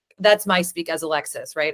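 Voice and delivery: ordinary talk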